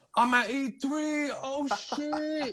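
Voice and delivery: acted out, very high, top-of-the-lungs excited scream. Recalling geeking out at e3; retelling his excited screaming. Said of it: "I'm like screaming at the top of my lungs".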